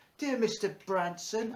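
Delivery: put-on, high, poor Victorian child voice. Reading out the start of a letter they once wrote, in a Victorian child voice. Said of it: "do it in a Victorian child voice".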